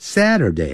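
pitch dropping high to low across Saturday. Teaching English weekday names in Chinese, Saturday falling high to low. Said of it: "由高往低这样念".

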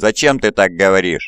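ordinary talk

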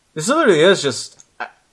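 ordinary delivery, nothing marked

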